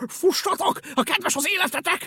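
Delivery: very high, shrill, loud shouted cry. Narrator reading a story, a dog running past calls out to others, shouted. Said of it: "Kiáltotta".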